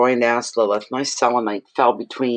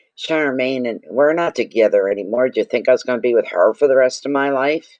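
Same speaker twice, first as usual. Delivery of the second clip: ordinary delivery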